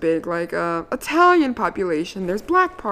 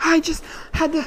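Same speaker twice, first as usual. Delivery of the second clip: panting, winded, breathless words, pitched up with gasps; 9 semitones higher than usual. Retelling what a driver said while out of breath: imitating someone out of breath. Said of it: "he's all out of breath".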